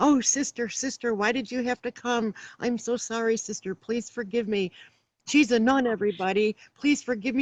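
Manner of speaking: put-on drunk-sounding, begging, pleading voice. Retelling a drunk man's reaction when she arrived on duty, imitating a drunk man pleading. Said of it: "he would get really drunk and inebriated".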